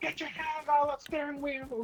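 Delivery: high-pitched shout like through a megaphone. Joking about pulling over a driver, shouting through a police megaphone. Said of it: "I'll be using a megaphone from the police car".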